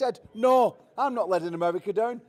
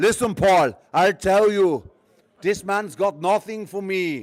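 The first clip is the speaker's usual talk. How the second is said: loud, attempted Eastern European accent; 2 semitones lower, 6 dB louder than usual. Retelling what a man said to him last night: Eastern European accent impression. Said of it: "I'll try to do his accent".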